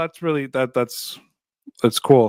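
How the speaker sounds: sincere words with an unintended sarcastic ring. Telling a guest something is cool, sounding sarcastic by accident. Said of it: "that sounded so sarcastic".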